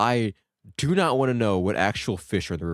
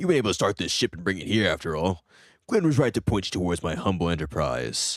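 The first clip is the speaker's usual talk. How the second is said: gruff, gruffer character voice; 3 semitones lower than usual. Voicing a shipbuilder greeting the new Spiritfarer in the game, gruffer voice. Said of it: "I gotta do a gruffer voice".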